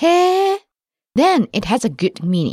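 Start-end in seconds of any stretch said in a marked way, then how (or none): 0.0-0.6 へー swooping upward in pitch through the word. Explaining when へー has a good meaning: rising pitch on へー. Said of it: "if it goes up like this".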